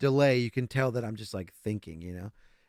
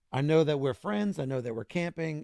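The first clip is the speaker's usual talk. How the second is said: ordinary talk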